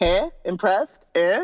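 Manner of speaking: play-acted cheeky, smirky, prodding tone. Describing his cheekiest smile: imitating a smirky cheeky tone.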